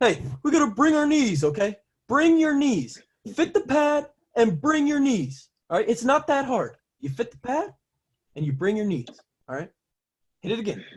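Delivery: very high-pitched voice. Recalling KF calling out from the corner of practice, imitating KF's high voice. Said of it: "And it's just this like kind of high".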